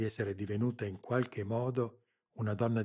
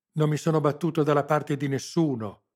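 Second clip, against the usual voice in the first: very loud shout, voice cracking; 5 semitones higher, 10 dB louder than usual. A man shouts back at the person challenging him, shouting with a breaking voice. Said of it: "urlò ancora lui, con voce spezzata".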